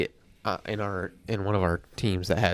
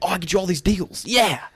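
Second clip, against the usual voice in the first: put-on, very high-pitched, shrill screaming; 10 semitones higher, 3 dB louder than usual. Retelling how Rick talks to shoppers with tools: imitating Rick yelling. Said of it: "screaming at them".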